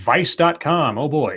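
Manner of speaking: usual speaking voice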